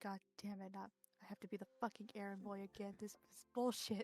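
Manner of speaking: very quiet, low, annoyed muttering under the breath. A player voices their character lying in the nurse's office, grumbling under his breath. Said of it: "grumbling under his breath".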